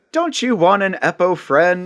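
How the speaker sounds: delightfully cheery, sunny, bright voice. Arriving in the Winter Wonderland, a voice greets you, delightfully cheery. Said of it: "that delightfully cheery voice says".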